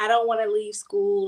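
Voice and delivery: put-on tearful crying voice. Retelling a call to her where she begged while crying: retelling own tearful plea. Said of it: "I called her bawling my eyes out".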